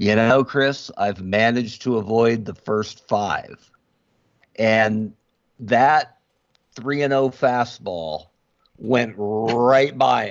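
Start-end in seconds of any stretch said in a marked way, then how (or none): 0.0-3.7 put-on, heavy, dripping sarcasm. Retelling a reply to a friend's movie question: heavy sarcasm. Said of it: "with as much sarcasm as you can drip off of words".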